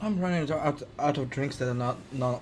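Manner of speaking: stuttering, stammering and repeating words. Chatting casually with others, stuttering over the words. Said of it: "I'm stuttering".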